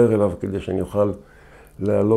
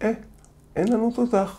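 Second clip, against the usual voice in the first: put-on very high-pitched small five-year-old child's voice; 14 semitones higher than usual. Retelling what he told his crew after a hit, in a five-year-old child's voice. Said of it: "בקול של ילד בן חמש".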